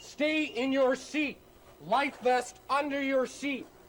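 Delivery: urgent, very high yelled delivery. Asked what you shout to passengers when something goes wrong, shouting commands. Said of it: "What do you shout to your passengers?".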